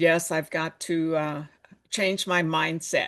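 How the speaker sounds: normal talking voice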